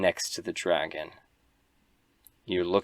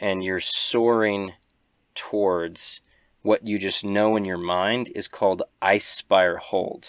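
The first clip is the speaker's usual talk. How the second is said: usual speaking voice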